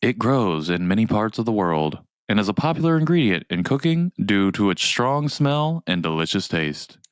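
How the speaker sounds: sweet, dulcet, mellifluous reading tone. Reading product text aloud for viewers, in a dulcet reading voice. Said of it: "read that though, but with a uh, uh, dulcet tone".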